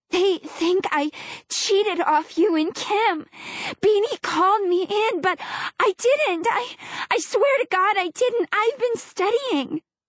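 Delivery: trembling, unsteady, high-pitched voice. A girl takes a deep breath and speaks to the narrator in a shaky voice. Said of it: "Her voice is shaky".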